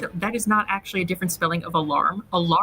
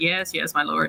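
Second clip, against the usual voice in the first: mock bored guard voice; 2 semitones lower than usual. Mocking a guard's line read in a game scene: imitating a bored guard. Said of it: "he sounded so bored with the whole situation".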